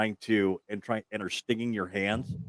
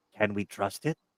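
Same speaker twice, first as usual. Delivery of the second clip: put-on creature voice, quieter; 3 dB quieter than usual. During a game, a player voices a creature, in a creature voice. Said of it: "you get a pause out of this creature, and it's".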